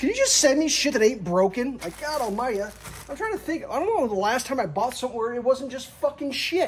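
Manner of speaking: losing it completely, high-pitched freaking-out rant. Complaining about being sent broken things, freaking out. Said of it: "I'm just freaking out right now".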